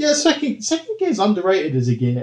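high, swooping, fake-earnest sarcastic tone. Speaker recalling a car stuck in second gear, mock-sarcastic Richard Hammond. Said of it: "obviously he's being sarcastic".

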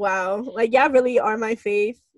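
plain

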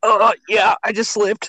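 high voice, brushing things off dismissively. Retelling what a former coworker said after a kick: Eric's battered-wife voice. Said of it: "Sounded like a battered wife".

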